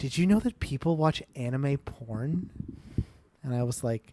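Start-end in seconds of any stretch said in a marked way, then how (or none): 0.0-2.5 soft, hushed half-whisper. Retelling a conversation about the speaker's anime shirt, imitating her half-whispering. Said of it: "she kind of whispers this part".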